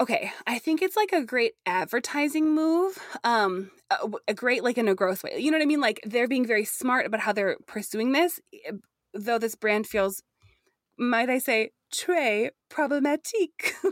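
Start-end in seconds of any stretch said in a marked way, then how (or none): 11.9-13.7 deliberately bad put-on French accent. Talking with a co-host about a brand's advertising: bad French accent. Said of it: "I'm gonna say it in bad French".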